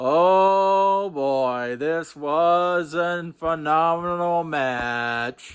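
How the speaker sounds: sarcastic, very slow, long drawn-out "oh". Reviewing a Raw tag team title match: sarcastic. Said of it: "I'm being sarcastic".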